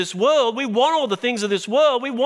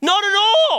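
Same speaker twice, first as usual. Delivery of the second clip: very high, cracking voice; 10 semitones higher, 4 dB louder than usual. Speaker teaching on a Bible chapter answers their own question, voice cracking. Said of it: "my voice is cracked".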